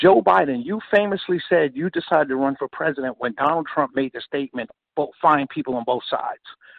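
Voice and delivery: ordinary talk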